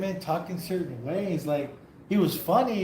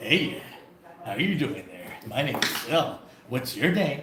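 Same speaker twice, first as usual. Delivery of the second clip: low, deep villain voice; 5 semitones lower than usual. Retelling a parody scene where the character Cell greets a city: imitating Cell. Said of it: "He's like".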